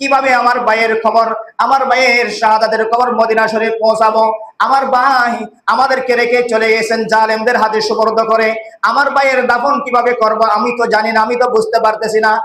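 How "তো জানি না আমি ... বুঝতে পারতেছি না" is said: normal talking voice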